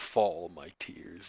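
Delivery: bass-heavy, deep, low voice kept soft and hushed. Discussing a character and recalling one of his lines, doing Ryoma's deep voice. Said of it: "his deep voice also just adds to it".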